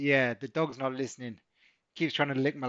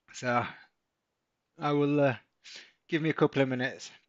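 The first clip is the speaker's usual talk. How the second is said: breathless, out of breath. Talking through a trade after getting back from a run: out of breath. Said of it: "I certainly am a little bit out of breath".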